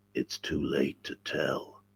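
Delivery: low, deep, breathy, hushed, slow American drawl. Retelling Jim's reply when asked if he slept well, in Jim's deep American voice. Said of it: "he had a very deep American voice".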